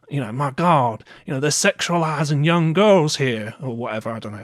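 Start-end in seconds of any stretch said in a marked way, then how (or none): 0.3-3.5 loud put-on middle-America accent. Imitating a random person from middle America: put-on accent imitating a random person. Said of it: "I don't know why I did that accent".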